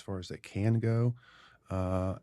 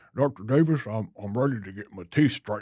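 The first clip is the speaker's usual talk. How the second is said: put-on quirky old man character voice. Retelling what an older patient said one day: impression of an older patient. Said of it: "Brilliant impression".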